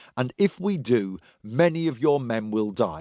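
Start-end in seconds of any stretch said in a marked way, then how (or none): none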